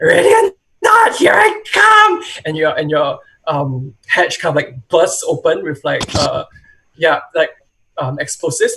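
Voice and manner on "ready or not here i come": very high, long, drawn-out scream. Narrating a scene, a voice outside the hatch screams: high-pitched scream. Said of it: "there's a high high pitched voice outside that screams".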